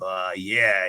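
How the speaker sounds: put-on halting, hesitant old man voice, full of ums. Retelling how Stu Hart approached bodybuilders at gyms: imitating Stu Hart's way of talking. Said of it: "'cause he talked like that".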